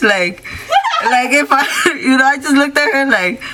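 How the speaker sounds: high-pitched, laughing all the way through.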